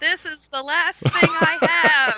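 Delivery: very loud, high, carrying shout. A player's character feeds a healing potion to a bleeding character, very loud. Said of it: "I say very loudly".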